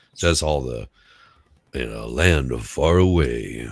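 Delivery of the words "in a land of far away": deep, slow, storybook voiceover narrator voice. Showing the voiceover voice a cold gave: deep narrator voice. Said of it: "that deep".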